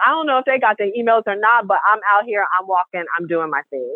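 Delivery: ordinary talk, nothing marked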